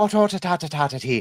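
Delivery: put-on Irish accent. Joking around with friends in a put-on Irish accent. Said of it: "There's my fucking Irish accent".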